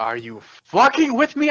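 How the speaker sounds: shrieking, very high, swooping, rising scream. A player in a tabletop game reacts in character, screaming. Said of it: "I scream out".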